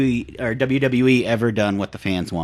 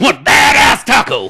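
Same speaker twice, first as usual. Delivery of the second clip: put-on high, loud, slow shouting voice. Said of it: "I really hope Goldberg sounds the way he does".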